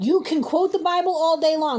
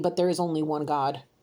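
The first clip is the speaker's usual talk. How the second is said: low, soft, quiet insistence. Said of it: "repeating the one-God point".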